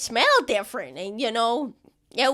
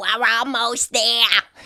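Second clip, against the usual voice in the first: put-on rat voice; 3 dB louder than usual. Voicing a rat guiding a player to the king: rat voice. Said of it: "I'm running out of rad voices".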